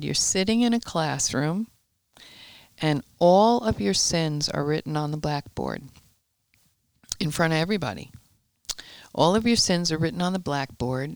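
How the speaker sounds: ordinary delivery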